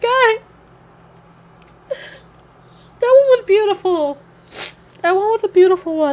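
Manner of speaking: talking while crying through the words. After a story is read aloud to listeners, crying while talking. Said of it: "I'm actually crying".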